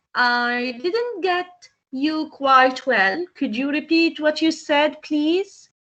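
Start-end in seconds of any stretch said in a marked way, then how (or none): none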